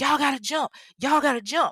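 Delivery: mock urgent, high-pitched shouted yell. Narrator retells a man outside a window calling to people inside; retelling a yell. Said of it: "like he's yelling to them".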